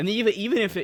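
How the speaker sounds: voice breaking and cracking mid-phrase. Reasoning aloud about why the shutters closed, voice cracking. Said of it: "sorry, voice crack".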